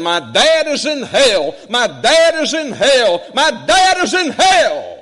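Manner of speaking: high, loud, slow screaming. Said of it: "began to scream into the phone".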